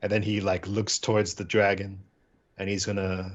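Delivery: plain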